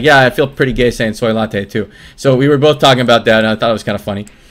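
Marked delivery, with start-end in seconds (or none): none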